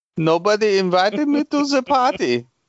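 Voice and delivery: bad fake Italian accent drifting into German. Commenting on a game scene with others, voicing it in a bad Italian accent. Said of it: "That's the worst Italian accent".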